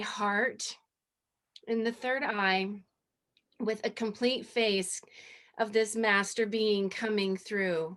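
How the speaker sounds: voice catching and breaking, choked up, halting. Describing a picture they took of the sky, speaking choked up. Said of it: "I'm getting really choked up".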